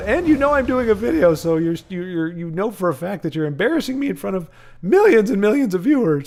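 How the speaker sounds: voice cracking, breaking up mid-sentence. Speaker addressing a friend who just beat them, on video, voice cracking. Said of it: "My voice is cracking".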